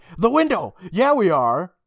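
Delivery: frantic, over-eager, super desperate, high and loud. Retelling how Ian cuts into Katie's sentence; mock super-desperate interruption. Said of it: "being like super desperate".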